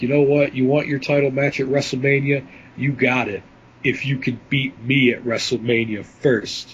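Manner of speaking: plain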